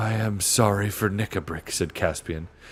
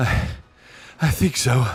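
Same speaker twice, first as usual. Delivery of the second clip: slow, out of breath, gasping, panting voice; 3 semitones higher, 3 dB louder than usual. Reading a story aloud, a boy answering after a fight: panting. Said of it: "panted Edmund".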